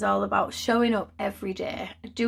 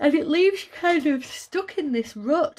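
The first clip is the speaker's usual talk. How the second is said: speaking through yawns, much higher; 6 semitones higher than usual. Speculating about the listener's life, yawning while talking. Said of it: "sorry I'm yawning so much".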